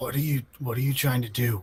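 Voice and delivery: hushed whisper. Asking if Asher still follows along, then acting out the line: whispering as Asher. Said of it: "follow you still and whisper".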